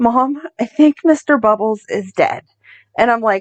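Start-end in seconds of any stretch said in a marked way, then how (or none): 0.0-2.4 acted, teary voice close to crying. Retelling a daughter coming in with tears in her eyes: imitating a tearful daughter. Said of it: "she comes in with tears in her eyes".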